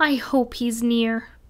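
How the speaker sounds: ordinary delivery, nothing marked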